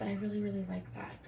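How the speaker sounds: very quiet, soft, hushed half-whisper. Speaker asking viewers what they think of the work, half-whispering. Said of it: "I don't know why I'm whispering".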